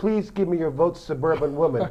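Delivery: ordinary delivery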